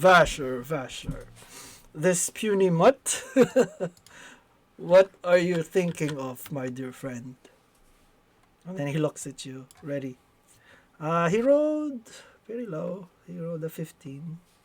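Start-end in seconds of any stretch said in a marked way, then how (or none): 0.0-7.4 huge, booming voice of a great dragon. Narrating a game scene, the speaker voices the dragon addressing Vasher, big booming dragon voice. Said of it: "a big booming voice uh, from the dragon".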